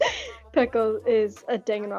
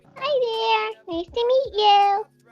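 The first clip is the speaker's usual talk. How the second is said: put-on very high little girl voice; 12 semitones higher than usual. Trying out another voice for the others, putting on a little girl voice. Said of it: "try um a little girl".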